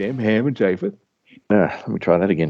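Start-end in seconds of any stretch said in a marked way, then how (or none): 0.0-0.9 words coming out mid-yawn. Ending a podcast episode, talking through a yawn. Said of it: "Talking through the yawn words".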